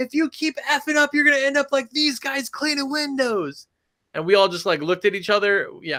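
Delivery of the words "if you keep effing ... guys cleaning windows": very high, shrill screaming voice. Retell how a mom screamed at her daughter while you cleaned windows, imitating someone screaming. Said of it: "she's screaming and screaming and screaming".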